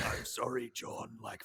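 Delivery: low, soft, unvoiced creepy monster whisper. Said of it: "and he's like".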